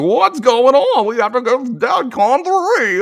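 very high, loud, slow, drawn-out flustered cry. Retelling a cartoon scene and quoting a character: Don Knotts voice. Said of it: "this is where the Don Knotts voice comes in".

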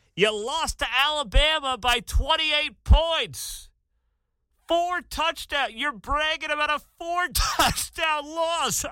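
high, slow, loud incredulous shout.

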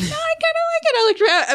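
high squeal of delight.

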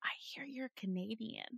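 barely voiced, breathy, hushed confiding whisper. Retelling what an instructor said at class: imitating a whisper. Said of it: "she whispers".

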